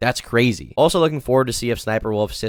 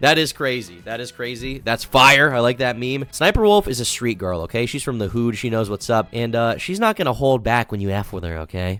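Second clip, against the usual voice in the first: plain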